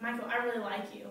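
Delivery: normal talking voice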